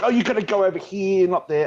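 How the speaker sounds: mock, high, half-shouted, almost yelling. Retelling the casting director's words after going to the wrong place, imitating someone almost yelling. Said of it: "the casting director was like almost yelling at me".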